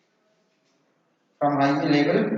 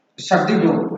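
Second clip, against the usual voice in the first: shut the door said with a plain falling tune. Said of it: "with falling tone".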